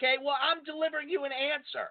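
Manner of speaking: soft, high, put-on condescending, talking-down tone. Retelling a parking argument, answering the neighbor, retelling own condescending voice. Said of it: "It was just this condescending voice I have".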